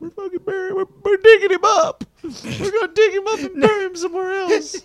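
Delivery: put-on very high, loud, tearful sobbing wail. Retelling the wife's reaction to leaving the dog's grave: imitating wife crying. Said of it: "crying their eyes out".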